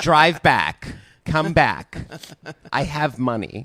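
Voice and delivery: very slow, drawn-out put-on girl voice. Doing an impression of another speaker, put-on girl voice. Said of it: "I was doing a girl voice".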